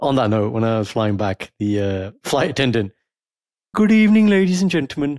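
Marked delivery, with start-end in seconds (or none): 3.7-5.2 put-on high, loud Brummy accent, announcement style. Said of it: "it's like a real Brummy man".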